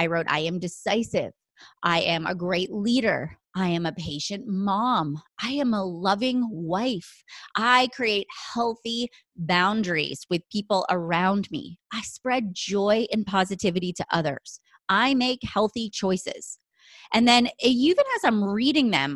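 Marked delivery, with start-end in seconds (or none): 0.3-16.6 firm, every word meant, full of conviction. Reading her morning affirmations aloud on a podcast, with conviction. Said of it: "can you feel the conviction?".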